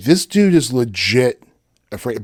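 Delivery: plain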